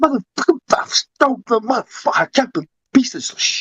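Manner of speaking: angry, furious rant, pitched very high. Imitating talking to oneself while washing dishes: imitating own angry ranting. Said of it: "you should hear me when I'm washing my dishes, talking to myself".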